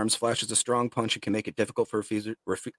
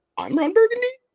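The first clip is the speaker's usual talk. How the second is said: pitch climbing very high and loud at end; 8 dB louder than usual. Quoting a movie line as a question: voice going really high at the end. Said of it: "Really high voice got really high, too, as you finished".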